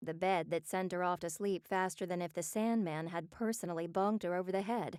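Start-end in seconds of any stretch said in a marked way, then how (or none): none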